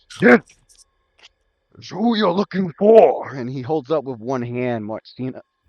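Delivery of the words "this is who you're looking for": loud, guttural, growling lizardfolk voice. Voicing a lizard folk leader addressing the party: deep guttural lizard folk voice. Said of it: "a really deep, guttural, freaking lizard folk voice".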